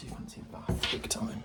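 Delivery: soft whisper.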